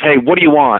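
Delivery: ordinary delivery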